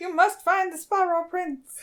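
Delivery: tiny, high-pitched little frog voice. Telling a story where Toki hears a little voice, in a little frog voice. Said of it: "It is very much that kind of a voice".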